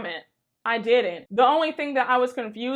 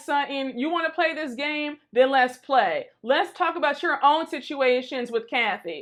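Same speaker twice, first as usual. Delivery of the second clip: plain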